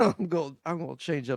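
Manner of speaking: ordinary delivery, nothing marked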